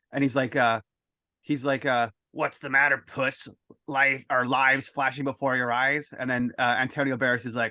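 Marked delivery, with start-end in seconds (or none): 2.4-6.2 put-on growly villain voice. Describing a scene to the listener, the speaker quotes Death: growly Death voice. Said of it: "really growly, good voice".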